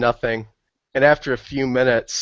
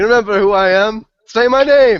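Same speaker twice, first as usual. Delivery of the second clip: very high, shrill, loud, demanding shout; 10 semitones higher, 7 dB louder than usual. Wrestling another character in the mud, yelling in character. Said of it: "as I'm throwing him into the mud".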